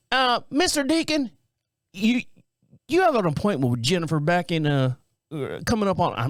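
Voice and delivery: put-on Southern accent. Retelling a woman's phone call from a healthcare system, in a put-on Southern accent. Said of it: "I don't know why I sound Southern".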